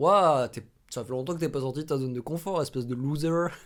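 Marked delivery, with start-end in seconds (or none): 2.6-3.5 slight put-on English accent on loser. Mocking what people say to you, with a little English accent on 'loser'. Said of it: "ce petit accent anglais en plus en le disant".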